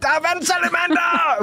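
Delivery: very high, overjoyed, joyful shout. Recalling phoning someone after finding a newt, retelling a joyful shout. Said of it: "jeg kommer til at råbe i telefonen sådan".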